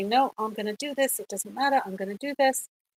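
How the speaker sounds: ordinary talk, nothing marked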